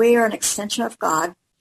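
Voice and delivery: normal talking voice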